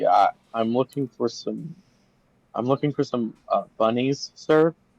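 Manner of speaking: acted jittery, unsure, nervous, hesitant manner. Voicing a character handing over a coin and giving a password: acting nervous. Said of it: "he's acting nervous".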